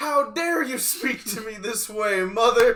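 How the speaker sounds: indignant, high-pitched, loud cry.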